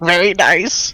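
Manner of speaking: very high, scratchy creature voice. Repeating another's words in character, scratchy Kenku voice. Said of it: "repeat in my very scratchy Kenku voice".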